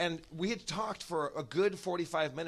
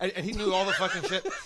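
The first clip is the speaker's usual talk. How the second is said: plain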